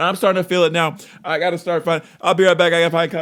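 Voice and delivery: panicked announcer voice. Pretending to be a weatherman reporting live from the rain, panicked weather reporter voice. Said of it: "Could I pass for a national weatherman?".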